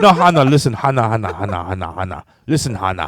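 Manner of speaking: put-on Arabic-accented English. Describing how a woman talks, the speaker imitates English with an Arabic tone. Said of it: "make her do the accent".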